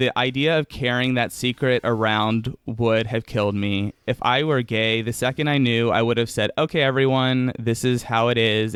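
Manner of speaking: ordinary talk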